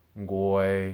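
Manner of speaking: goi held level at mid pitch. Listing examples of the middle tone, middle tone on goi. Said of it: "Examples of the middle tone are".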